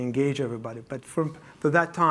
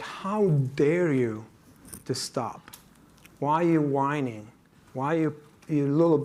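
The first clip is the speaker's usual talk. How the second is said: play-acted scolding, indignant mother voice. Speaker imitates an Israeli mom who scolded him, retelling a scolding. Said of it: "and she scolded me".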